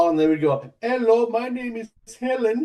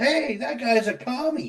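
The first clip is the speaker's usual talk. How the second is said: put-on kid voice in a 1960s television style; 3 dB quieter than usual. Urging Steve to find the voice, quoting the 1960s TV kid: 1960s TV kid voice. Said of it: "that voice of that kid from like the sixties show".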